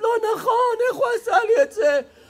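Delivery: very high, fast wailing sob. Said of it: "בוכה, צורחת".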